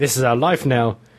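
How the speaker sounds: put-on deep manly voice. Retelling how a man answered her after she asked about his hand, put-on deep manly voice. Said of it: "lowered his voice to a really kind of deep, manly".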